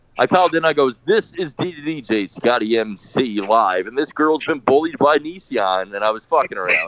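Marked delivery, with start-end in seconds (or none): 1.0-3.9 very slow, drawn-out put-on radio DJ voice. Retelling calling back and introducing himself, in a put-on radio DJ voice. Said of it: "called in as the radio voice".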